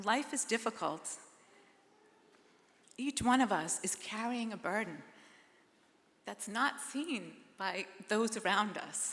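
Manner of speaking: emotional, voice catching and choking up. Speaking to the community at Blessed Trinity, voice choking up. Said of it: "I'm getting a little emotional".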